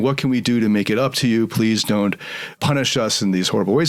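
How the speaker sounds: plain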